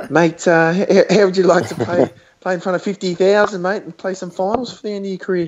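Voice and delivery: squeaky, very high, stumbling pitch. Retelling what a club official said on a phone call: imitating a squeaky voice. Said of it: "in his squeaky voice".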